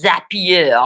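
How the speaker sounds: said with a French accent. Naming something before spelling it out, saying 'Zapier' in a French accent. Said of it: "I don't know why I said that in a French accent".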